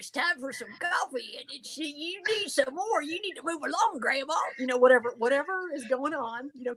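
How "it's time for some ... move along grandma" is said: pitched-up talking-dog character voice. Demonstrating a dog talking to Grandma, in a dog character voice. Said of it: "the dog's like".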